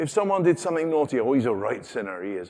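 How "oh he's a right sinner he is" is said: put-on Devon accent. Quoting what people used to say about someone naughty, in a Devon accent. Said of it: "that's a Devon accent came out there".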